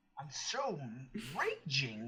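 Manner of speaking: voice cracking. Reacting to a card read out during a card game, voice cracking. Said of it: "My voice cracked".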